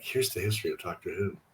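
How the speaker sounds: smooth jazz voice, very deep, soft and hushed. Retelling leaning into the microphone on a call, smooth jazz voice. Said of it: "did my my smooth jazz voice".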